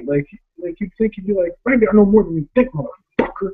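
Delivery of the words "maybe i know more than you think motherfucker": mock mad, heated, angry delivery. Showing how a movie character should have said his line, mock-angry line delivery. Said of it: "Like he's mad".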